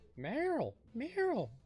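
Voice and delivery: not-great high-pitched voice. Speaker calls out in a high-pitched impression, admitting it isn't great. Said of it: "not a great uh, impression. I can't go high pitched".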